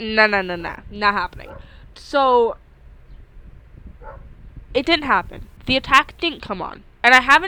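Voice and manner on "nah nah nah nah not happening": usual speaking voice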